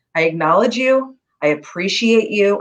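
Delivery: ordinary talk, nothing marked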